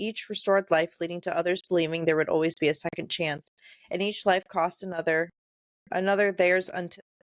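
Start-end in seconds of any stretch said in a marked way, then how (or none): none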